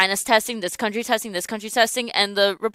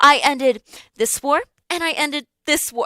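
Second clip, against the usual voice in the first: put-on condescending, talking-down tone, as if to a child; 6 semitones higher than usual. Recounting Trump's answer to an interviewer, in a mock-condescending Trump impression. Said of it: "like in that tone".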